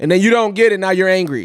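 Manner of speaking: ordinary talk, nothing marked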